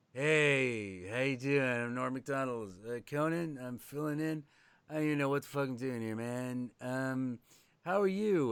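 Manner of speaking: put-on acted hungover, under-the-weather voice with drawn-out hey. Retelling a guest host greeting his guest: imitating hungover Norm Macdonald. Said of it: "either working off a hangover or he's really sick".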